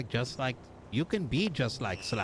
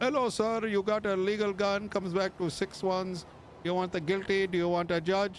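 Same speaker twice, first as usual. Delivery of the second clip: put-on Indian accent, higher pitch; 7 semitones higher than usual. Mocking a robotic cop by imitating Indian tech support: Indian tech support voice. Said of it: "like Indian tech support".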